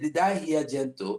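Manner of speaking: ordinary delivery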